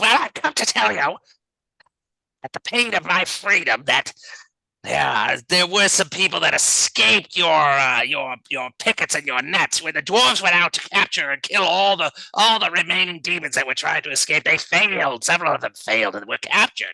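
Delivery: high, fiendish, impish creature character voice. Voicing a small imp that scuttles out before the heroes: voicing an imp. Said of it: "And he says".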